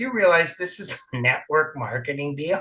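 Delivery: hushed stage whisper aside. Sitting in the front row at an event, the speaker retells a remark; retelling a half-whisper. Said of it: "I'm whispering there".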